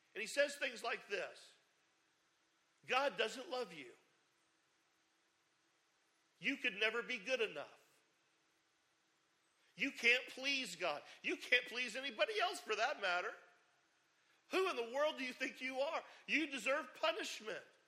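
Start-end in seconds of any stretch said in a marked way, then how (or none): 2.8-17.6 put-on tempting whisper, pitched higher. Speaker acting out what Satan whispers in your ear: Satan whispering. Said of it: "Satan comes and he whispers in your ear".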